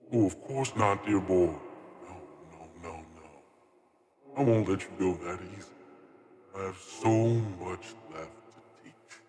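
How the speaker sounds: whispering voice. A narrator voices a voice whispering in a near-dying character's mind. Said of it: "the voice whispers in your mind".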